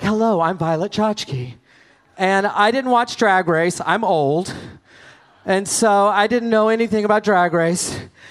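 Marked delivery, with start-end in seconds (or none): 0.0-1.5 mock haughty, very arrogant, self-important tone. Retelling how Violet Chachki introduced herself at a party: imitating Violet Chachki arrogantly. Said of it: "she very arrogantly was like".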